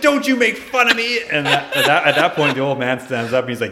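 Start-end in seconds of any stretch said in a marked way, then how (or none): 0.0-1.2 mock angry outburst, higher and louder. Retelling how a man in the office came unglued: imitating someone coming unglued. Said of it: "He fucking comes unglued".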